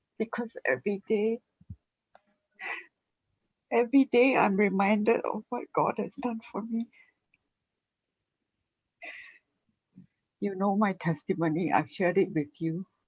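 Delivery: tearful, choked-up voice. Telling others of being reminded daily of God's help, tearful, close to crying. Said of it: "I'm actually tearing and tearing".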